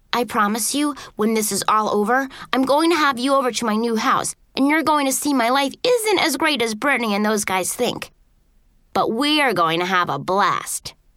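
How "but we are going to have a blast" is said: ordinary delivery, nothing marked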